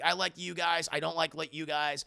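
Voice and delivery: normal talking voice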